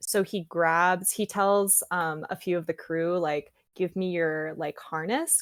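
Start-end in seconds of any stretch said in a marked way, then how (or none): none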